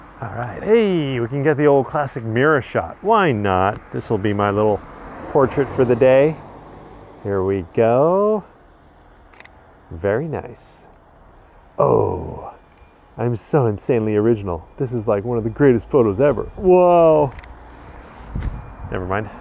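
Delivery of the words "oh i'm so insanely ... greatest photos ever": openly sarcastic, self-congratulating tone. Taking a mirror shot photo of oneself, sarcastic. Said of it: "Excuse the sarcasm".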